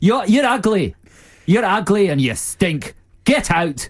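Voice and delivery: hammy Scottish accent. Answering a silly product idea, speaker responds in a bad Robin Williams Scottish accent. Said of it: "I just like that Scottish accent".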